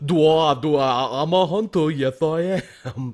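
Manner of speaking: cartoonish hunter character voice. Joking about a gritty Batman film, the speaker does an Elmer Fudd voice. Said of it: "I can't do a good one".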